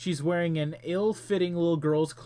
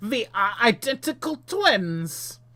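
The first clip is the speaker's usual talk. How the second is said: put-on thick, loud, laid-on Austrian accent; 6 semitones higher, 5 dB louder than usual. Narrating the giant's reply in an interactive story, heavy austrian accent. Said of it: "it is an Austrian accent".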